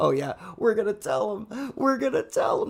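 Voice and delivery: put-on laughing while talking. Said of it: "they're wheezing, they're all laughing".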